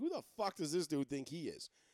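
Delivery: ordinary talk, nothing marked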